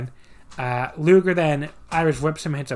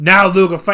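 very loud, bellowed, badly done Boston accent; 3 semitones higher, 8 dB louder than usual. Retelling what Taskmaster points out after a match: imitating Taskmaster's Boston accent. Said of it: "I can't do a Boston accent".

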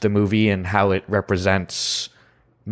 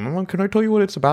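very high, smothered, muffled, mumbling voice; 11 semitones higher than usual. Retelling a man, still lying down, asking to describe a movie: muffled voice. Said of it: "just like muffled voice".

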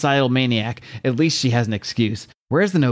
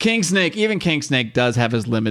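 plain reading voice

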